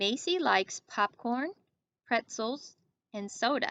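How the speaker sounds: short pauses after popcorn, then after pretzels. Reading a list sentence aloud, pausing after popcorn and pretzels. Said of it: "Notice I paused after Macy likes popcorn".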